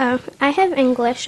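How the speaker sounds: usual speaking voice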